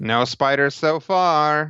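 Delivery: slow, high, ominous teasing tone.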